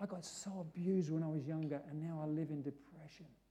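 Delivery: low, hushed, barely audible half-whisper. Speaker retells what a shy woman told them, retelling her half-whisper. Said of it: "she's whispering to me".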